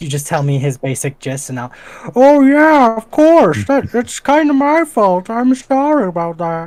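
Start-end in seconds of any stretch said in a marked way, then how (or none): 2.1-6.7 shrill, loud, slow, drawn-out, booming god character voice. Voicing the other god in a mind meld: voicing a fellow god of humanity. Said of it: "I'm going to voice act this guy".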